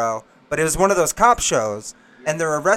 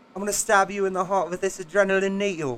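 put-on English accent; 4 semitones higher, 5 dB quieter than usual. Repeating the movie line when asked for the accent again: Russell Brand accent. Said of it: "Can you do that, that accent again?".

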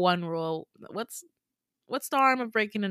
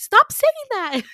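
squeaky, very high-pitched, loud yelp; 10 dB louder than usual. Retelling what he said after being called cutie, imitating his high voice. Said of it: "his voice gets so high".

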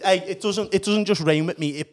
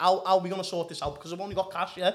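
normal talking voice

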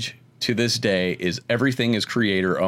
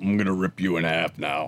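hulking, heavy, menacing villain voice; 2 semitones lower than usual. Showing how the quoted threat should sound: Juggernaut voice. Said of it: "you gotta do the voice".

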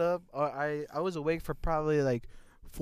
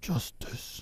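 whispered superhero character voice. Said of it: "you wanna wake up to Batman".

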